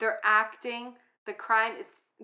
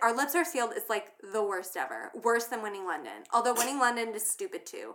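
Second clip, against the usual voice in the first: ordinary delivery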